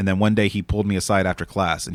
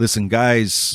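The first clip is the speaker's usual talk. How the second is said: put-on New Jersey accent; 2 semitones higher than usual. Retelling a teacher from Jersey addressing the class, imitating a Jersey accent. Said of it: "he still had his Jersey accent".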